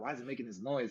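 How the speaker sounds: ordinary talk, nothing marked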